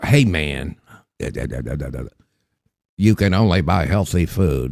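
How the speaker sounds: low, trembling, shaky, wavering voice. Imitating a man telling people what food they can buy, in a shaky RFK voice. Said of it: "with his shaky ass voice".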